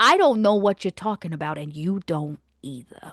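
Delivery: menacing, daunting, intimidating voice with full presence. A player answering someone in the game, using an extra daunting voice. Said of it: "let's just use my extra daunting voice".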